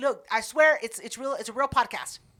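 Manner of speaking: ordinary talk, nothing marked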